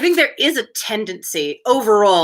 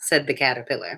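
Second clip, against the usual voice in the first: usual speaking voice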